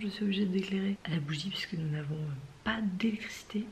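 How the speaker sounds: hushed whisper. Explaining a candlelit cooking scene during a power cut, whispering. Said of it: "Je chuchote".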